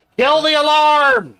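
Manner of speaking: shrill, very loud, full-throated high yell. Telling someone in another room to stop an alarm: yelling. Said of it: "I'm gonna be yelling".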